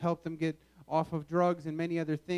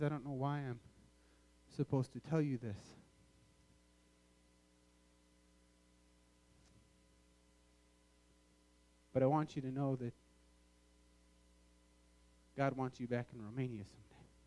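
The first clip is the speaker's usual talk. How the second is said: hushed, soft half-whisper, close up; 4 semitones lower, 8 dB quieter than usual. Retelling what the tour guide half-whispered into the ear: imitating a half-whisper. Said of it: "he whispers into my ear".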